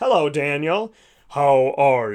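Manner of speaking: big booming voice, nice and slow. Acting out how people imagine God speaking to them, in a big booming God voice. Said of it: "God is this big booming voice".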